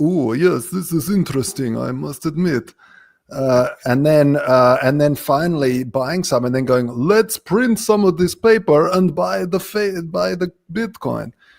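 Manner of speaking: terrible, badly put-on fake Russian accent. Acting out how people will come around to bitcoin, in a bad russian accent. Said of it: "this is a terrible accent".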